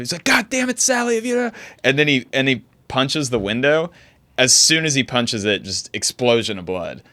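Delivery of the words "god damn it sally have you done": put-on shrill, very high-pitched, furious yelling. Retelling a man in a video yelling through a window: imitating someone yelling. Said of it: "and he's yelling".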